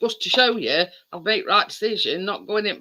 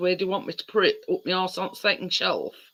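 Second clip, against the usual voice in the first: put-on muttering under the breath; 3 dB quieter than usual. Retelling a remark made under the breath about the cooker: imitating someone muttering under his breath. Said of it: "he sort of said under his breath".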